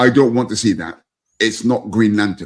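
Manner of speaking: acted, very authoritative, firm, final-sounding tone. Retelling a young son's refusal to see a movie: imitating authoritative tone. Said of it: "he says in a very authoritative way".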